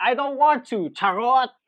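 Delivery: cheeky, joking, teasing, high and loud.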